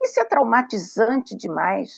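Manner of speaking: ordinary talk, nothing marked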